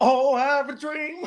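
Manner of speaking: very slow delivery, every word drawn out. Retelling a movie scene where a character is asked to do Martin: Martin Luther King impression. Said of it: ""Do Martin."".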